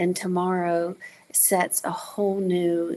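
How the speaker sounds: plain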